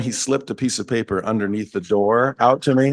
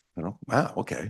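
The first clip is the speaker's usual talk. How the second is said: ordinary talk, nothing marked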